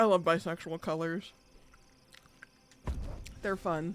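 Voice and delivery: munching while speaking, mouth full. Chatting casually about character colors, talking while chewing. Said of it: "I'm just munching on these fucking Doritos".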